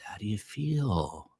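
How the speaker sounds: quiet, soft, hushed therapist voice, words drawn out. Imitating a therapist asking a question during a long session: soft monotonous psychiatrist voice. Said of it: "in a very sort of monotonous, quiet, soft psychiatrist voice".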